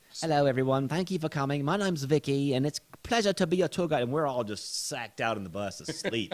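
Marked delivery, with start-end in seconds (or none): 0.2-4.0 put-on sweet, high-pitched little British accent. Retelling how a tour guide in London greeted the bus: imitating Vicky's sweet British accent. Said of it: "she had this sweet little British accent".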